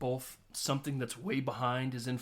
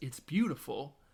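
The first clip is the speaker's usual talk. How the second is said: ordinary talk, nothing marked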